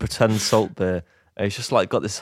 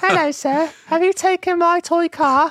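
put-on very high, loud, old-fashioned Victorian child voice; 5 dB louder than usual. Acting out a suggested bit, the speaker plays a victorian school child: victorian school child voice. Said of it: "Maybe he could do Victorian school child".

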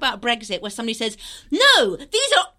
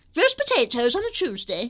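put-on grandmotherly old lady advert voice; 4 dB quieter than usual. Former face of Aunt Bessie's, asked to do the voice, doing Mabel's voice. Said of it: "Do the voice".

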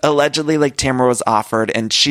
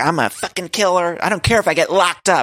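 mock all-out hollering, high and pitched-up; 7 semitones higher than usual. Speaker retells a woman ranting backstage: retelling her yelling. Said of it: "she's yelling".

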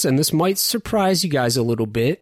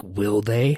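low, sarcastic, defiant tone. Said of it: "Master Chief replies in sort of a sarcastic tone, like a defiant tone".

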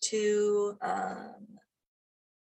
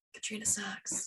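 soft, hushed, ghostly voice. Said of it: "I think I hear him now".

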